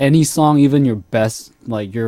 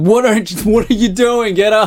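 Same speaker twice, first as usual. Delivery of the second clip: put-on, high, yelled rousing scolding tone; 9 semitones higher than usual. Speaker reenacts yelling at a roommate who won't turn it off, retelling own yelling. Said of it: "start yelling at him like".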